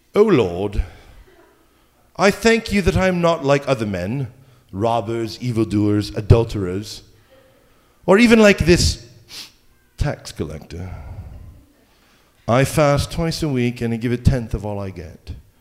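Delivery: put-on proper British accent. Speaker reading the parable acts out the Pharisee's prayer in a British accent. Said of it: "he did it with a British accent".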